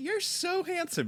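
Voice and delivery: very high, fond, doting voice. Repeating a remark to the other speaker in a doting parent tone. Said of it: "You're saying that like you would say that to like one of your children".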